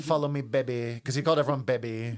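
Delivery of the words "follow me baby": put-on lisping southern wrestler voice. Retelling an impression of a boastful wrestler: Dusty Rhodes impression. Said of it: "Paul Heyman's impression of Dusty".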